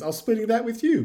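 high, loud, indignant voice.

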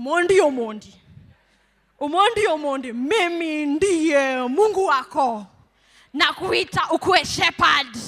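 loud, slow, drawn-out call. Imagining hearing a voice from heaven calling one's name: imitating Jesus calling. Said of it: "you'll hear a voice".

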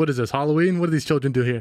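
ordinary delivery

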